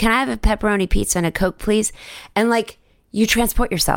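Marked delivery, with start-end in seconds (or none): 0.0-1.9 Texas-accented voice. Speaker demonstrates the same request again, this time in a Texas accent. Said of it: "And maybe in an accent, because I'm from Texas".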